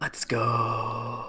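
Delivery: put-on ASMR voice. Saying "let's go" after being asked for ASMR: put-on ASMR voice. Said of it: "in A S M R voice".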